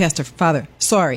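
ordinary talk

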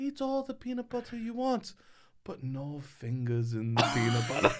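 put-on Swedish accent, laid on thick. Quoting a woman who spoke to him and his sisters as kids: attempted Swedish accent. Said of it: "This is [name]'s attempt at a Swedish accent".

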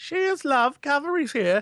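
put-on high British little-boy voice. Talking about Tracer voices, quoting the little boy from the cinematic. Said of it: "Best Tracer voice is the little boy".

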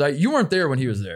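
ordinary talk, nothing marked

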